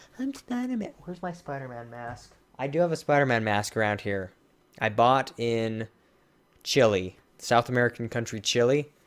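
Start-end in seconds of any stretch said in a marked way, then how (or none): 0.1-2.3 put-on very soft, hushed small child's voice. Retelling a scene where the Rhino attacks and a kid appears, imitating a little kid. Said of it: "the little kid's like".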